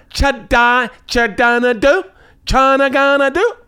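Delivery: high, loud nonsense babble in a put-on voice.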